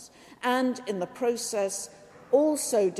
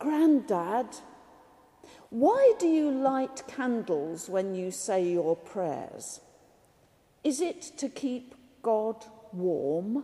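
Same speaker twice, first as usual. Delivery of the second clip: put-on whispering child voice. Retelling how a little grandson whispered a question: imitating a child whispering. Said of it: "the little boy leaned over and whispered to him".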